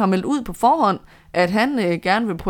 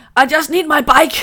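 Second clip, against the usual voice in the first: loud, high, raised shouted outburst; 8 semitones higher, 6 dB louder than usual. Speaker retelling what a cyclist shouted to his worried team: retelling a shout. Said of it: "så råbte han noget i retning af".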